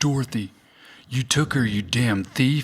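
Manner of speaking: deliberate, slow, drawn-out delivery. Retelling how a character says a movie line, Bill Paxton impression. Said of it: "He goes like".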